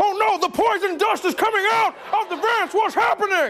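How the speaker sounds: bad, high, terrified squeaking outburst. Acting out a man panicking in the shower: bad Alex Jones impression. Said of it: "It's a bad A J impression".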